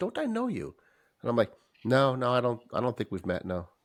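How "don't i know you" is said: put-on, very feminine voice, pitched way up. Retelling what a woman said, in a very feminine voice. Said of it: "In a very feminine voice".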